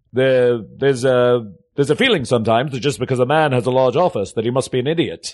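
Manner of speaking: put-on over-the-top mid-Atlantic accent. Describing a film's ad agency president, quoting him in a ridiculous movie mid-Atlantic accent. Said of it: "ridiculous movie mid-Atlantic accent".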